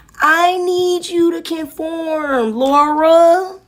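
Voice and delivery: mocking impersonation. Mockingly imitating someone pleading to be obeyed: mocking imitation of someone. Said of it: "That's what you sound like".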